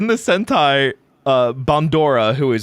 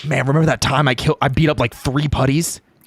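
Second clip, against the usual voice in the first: mock boastful teen hero voice. Mocking a character's weak memory of fighting putties: imitating Tommy. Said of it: "Tommy's like".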